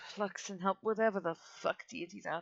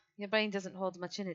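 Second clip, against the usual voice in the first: ordinary delivery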